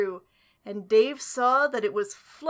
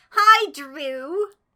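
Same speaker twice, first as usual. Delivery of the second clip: loud, cheery, chirpy; 4 semitones higher, 7 dB louder than usual. Reading a story aloud, a rabbit greeting Drew: chirpy cheerful voice. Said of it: "she chirped".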